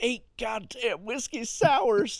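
very high, tearful, drawn-out crying outburst. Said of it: "he's flipping out on himself".

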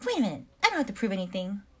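full-on loud, swooping hummingbird voice. Retelling Monica's thoughts in bed from an episode: hummingbird voice as Monica. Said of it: "Insert hummingbird voice".

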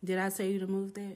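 plain

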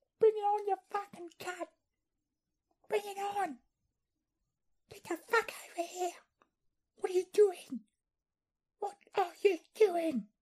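very high, furious, shrill Australian yelling. Imitating the distant sounds of an australian doing road rage. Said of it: "the distinct sounds of an Australian doing road rage".

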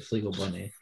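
very quiet, hushed, disappointed let-down tone. Showing someone how to say a phrase, in a disappointed tone. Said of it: "you just say it with such disappointment".

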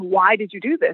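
ordinary talk, nothing marked

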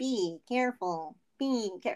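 slow, small robotic voice. Retelling how Cork walks around repeating an instruction, Cork's little robot voice. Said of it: "Cork just repeats things in his little robot voice".

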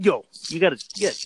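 mock brash, loud voice. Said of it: "he stood up in the meeting and was just".

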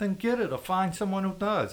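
very high-pitched, pushy, insistent demanding tone. Donnie answers a guard who says they don't have his file, demanding. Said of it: "demanded Donnie".

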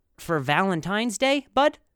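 ordinary talk

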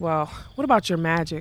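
plain reading voice

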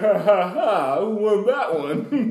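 play-acted very slow, loud, high, drawn-out jeering laugh. Picturing a rival team laughing at fans: imitating the Cavaliers laughing. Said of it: "They sit over there like".

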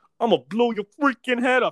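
put-on very loud, high, shrill, thick New York accent. Retelling what a bartender said when guns came out, heavy new york accent. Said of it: "hard on the New York".

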